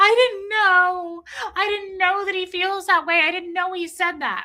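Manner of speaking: very high, weepy, fake sobbing crying voice. Imagining how someone would come out afterwards: imitating someone crying. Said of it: "Marilyn come out crying, going".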